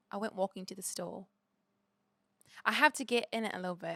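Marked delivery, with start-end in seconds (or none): 0.1-1.2 put-on British accent, much quieter. Asked to show a British accent, the speaker says a test sentence in a British accent. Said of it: "Hit me with your British accent".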